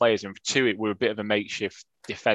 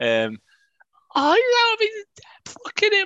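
mock high-pitched shriek, much higher and slower; 4 dB louder than usual. Telling about an annoying man sitting behind him, imitating his shrieking. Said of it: "a lot higher voice than you".

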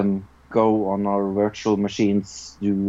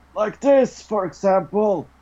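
put-on very high-pitched, aged, elderly character voice; 12 semitones higher than usual. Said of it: "I do a, an old voice".

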